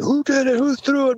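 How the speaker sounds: acted screaming. Recounting how a driver reacted when an egg hit his car window, retelling a scream. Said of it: "started screaming".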